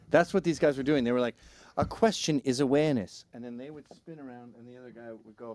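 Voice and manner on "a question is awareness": put-on British accent, higher pitch. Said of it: "I'm doing British 'cause I can't do Australian".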